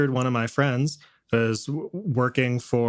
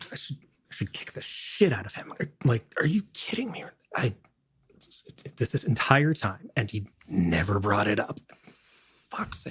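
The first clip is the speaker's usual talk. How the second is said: furious grumbling, whispered under the breath; 4 dB quieter than usual. Voicing a character shooting sandbags alone: angry muttering under breath. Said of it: "just kinda angrily talking kinda under her breath".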